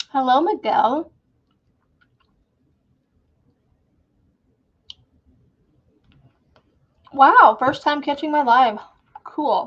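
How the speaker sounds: speaking while chewing, mouth full of food. Greeting a first-time viewer on a live stream, talking while chewing. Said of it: "I am chewing on a caramel filled caramel".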